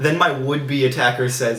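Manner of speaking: normal talking voice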